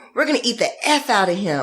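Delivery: mock, put-on streetwise attitude tone. The speaker retells a woman who screamed at a bird, then mock street attitude. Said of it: "she gets all like, you know, street".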